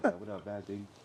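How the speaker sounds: very quiet, low, unnervingly calm hushed voice. Retelling how Vaz greets people in the club: imitating Vaz's calm, low voice. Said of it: "he's talking like this".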